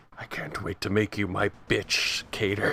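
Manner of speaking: muttered under breath. Player having his character wave goodbye to another character, muttered under breath. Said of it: "under my breath say".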